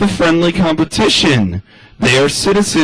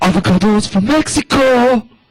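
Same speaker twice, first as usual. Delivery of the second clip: put-on seductive accented ad announcer voice, pitched up; 5 semitones higher than usual. Explaining the appeal of accented TV voices, doing the Avocados from Mexico ad voice. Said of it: "if I had an accent like that".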